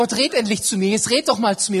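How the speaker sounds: rushed, words running together. Demonstrating talking to God, without any pause. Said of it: "Und das sagst du zu ihm ohne Pause".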